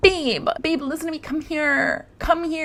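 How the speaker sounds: acted, very high-pitched, frantic, desperate voice. Retelling how a woman begged her husband: imitating desperate pleading. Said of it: "desperate mode".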